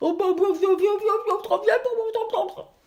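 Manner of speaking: put-on mouth-stuffed, muffled speech. Guiding listeners to repeat a belief in a silly way: speaking with mouth full of popcorn. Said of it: "vous dites la même phrase avec les pop-corn".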